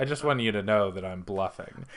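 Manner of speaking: ordinary talk, nothing marked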